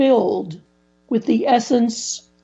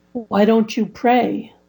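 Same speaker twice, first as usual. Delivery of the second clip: ordinary talk, nothing marked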